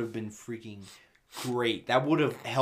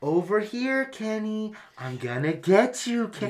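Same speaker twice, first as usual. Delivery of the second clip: put-on child voice, very high, slow, drawn-out; 9 semitones higher, 4 dB louder than usual. Retelling a movie scene of a troll chasing a kid: troll imitating a child's voice. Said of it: "it's the child's voice that's like".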